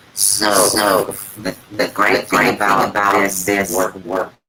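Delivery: very low, flat, droning robot monster voice. A guest just unmuted on a live stream speaks to the host: monster robotic voice. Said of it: "you just went like monster robotic voice".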